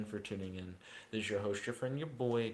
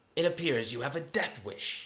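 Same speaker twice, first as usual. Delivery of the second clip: high, loud, feminine, sinister and menacing villain voice; 5 semitones higher, 5 dB louder than usual. Speaker attempting character voices one after another, Frieza voice, feminine and sinister. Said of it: "feminine, sinister voice".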